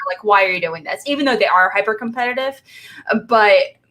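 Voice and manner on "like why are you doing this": usual speaking voice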